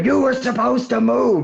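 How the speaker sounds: acted, very high, ragged, rough, furious scream. Retelling how Michaels screamed at Vader, who had not moved, retelling a scream. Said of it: "he started screaming at Vader".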